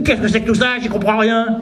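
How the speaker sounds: loud, high, bawling yell. Acting out a yell at the sky after leaving the cinema: imitating someone yelling. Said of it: "je commencerais à gueuler".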